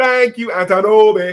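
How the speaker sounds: put-on Nigerian-accented speech. Quoting Antonobi's spoken logo, in Antonobi's Nigerian accent. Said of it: "In his Nigerian voice".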